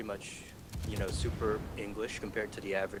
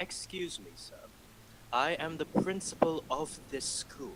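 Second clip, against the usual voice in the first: put-on British accent, higher pitch; 6 semitones higher than usual. Retelling how mom answers difficult parents as school principal: put-on British accent. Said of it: "she just goes full British".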